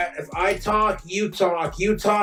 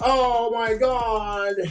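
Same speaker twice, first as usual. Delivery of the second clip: mock tearful crying, God drawn out; 4 semitones higher than usual. Retelling how she reacted to a ring gift: imitating someone crying. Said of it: "she was all crying".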